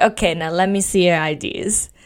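put-on New Jersey girl accent. Quoting a girl with a Jersey accent: imitating a Jersey accent. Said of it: "the girl with the Jersey accent".

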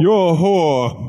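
high, slow, drawn-out posh British lord voice.

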